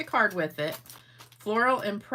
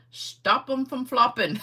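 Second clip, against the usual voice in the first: fake German accent with raised pitch; 6 semitones higher, 3 dB louder than usual. Telling a joke about how to say bra in german: fake german accent. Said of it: "I'm gonna say it like I'm German".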